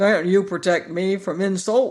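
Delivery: said with a growl. The Sawhorse, feeling insulted by the Pumpkinhead, complains to Tip: growled. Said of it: "he growled".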